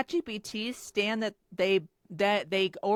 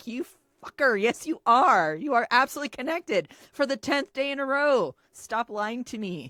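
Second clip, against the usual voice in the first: put-on heated, angry scolding tone; 3 semitones higher than usual. Recalling yelling at an ai chatbot that claims it's not connected: retelling an angry scolding. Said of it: "I have clapped back at".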